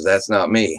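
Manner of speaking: hushed whisper. Retelling a cousin's reply while hiding from a helicopter: imitating a whisper. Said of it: "he whispers to me".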